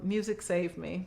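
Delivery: normal talking voice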